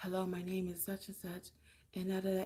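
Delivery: timid, barely audible, very quiet half-whisper. Showing how a timid speaker sounds on camera: half-whisper. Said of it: "just like a whisper".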